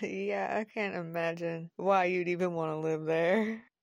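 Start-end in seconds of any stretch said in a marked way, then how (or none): none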